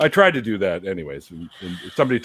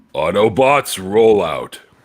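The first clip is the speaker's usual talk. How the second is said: cartoon robot voice, louder; 4 dB louder than usual. Asked to show it, getting into character for the 1980s Transformers cartoons: Optimus Prime voice. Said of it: "doing Optimus Prime's voice".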